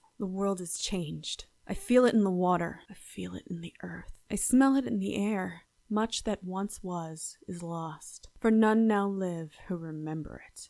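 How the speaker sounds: wrathful, anger-filled read. Showing a voice-acting read of the script as Wrath. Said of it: "so that's Wrath".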